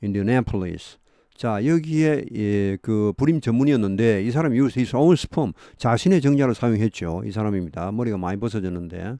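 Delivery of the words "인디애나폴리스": Indianapolis with main stress on the a. Korean talk about a fertility doctor in Indianapolis: stress on the a in Indianapolis. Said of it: "여기 액센트 A에 있죠".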